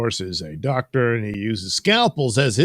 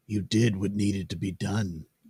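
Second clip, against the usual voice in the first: usual speaking voice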